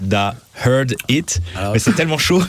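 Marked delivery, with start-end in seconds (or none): 0.0-1.4 "da heard it" pronounced in an English accent. Trying to say the name the English way: English accent on Da Heard It. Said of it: "j'essaie de dire avec l'accent anglais".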